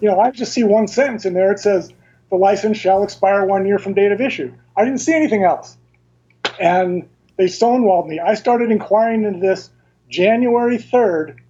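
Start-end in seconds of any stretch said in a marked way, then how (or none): none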